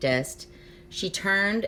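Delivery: ordinary delivery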